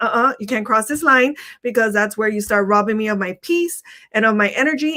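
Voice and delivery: ordinary delivery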